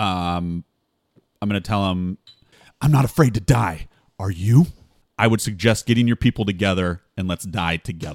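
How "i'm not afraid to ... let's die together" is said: menacing, intimidating whisper. Threatening a terrified enemy in character so only he hears: whispered intimidation. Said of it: "I'm gonna kinda whisper it so only he can hear me".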